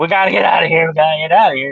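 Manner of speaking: scared, desperate, urgent screaming, words repeated. Retelling what a scared man shouted as he left: imitating someone screaming. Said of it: "He was screaming".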